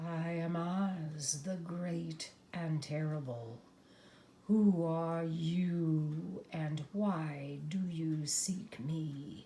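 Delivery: hushed, deep, slow voice with one word drawn out. Reading a story, Oz speaks from a ball of fire: low quiet Oz voice. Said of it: "a low, quiet voice came from the ball of fire".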